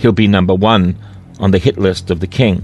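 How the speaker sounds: ordinary delivery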